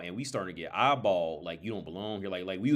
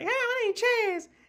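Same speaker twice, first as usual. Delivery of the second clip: very high-pitched, slow, mocking voice; 5 dB louder than usual. Retelling how a friend imitated Chaz's voice: Chaz voice. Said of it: "he used to make fun of his voice".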